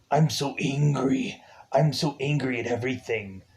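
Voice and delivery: goofy, stock movie-style upset, angry delivery. Mocking how upset characters in the movie talk: mocking the film's angry way of talking. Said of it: "every single person who has to be upset in this movie has to talk like this".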